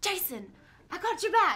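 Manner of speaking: put-on very loud, high, slight British accent. Retelling what she said to jason in the simulator: slight british accent. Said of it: "she tried to do a little bit of a British accent".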